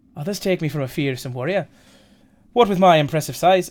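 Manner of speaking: put-on Welsh accent turning Irish. Voicing a character in a scene, welsh accent slipping into irish. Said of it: "it's gone Irish again".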